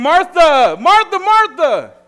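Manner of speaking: very high, very loud, sing-song calling out. Telling a joke about a boy separated from his mom at Walmart, retelling a boy yelling. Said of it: "So he starts yelling".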